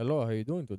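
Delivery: put-on light americanized Indian accent. Retelling a scam caller's greeting, in a light Americanized Indian accent. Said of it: "a very Americanized Indian accent".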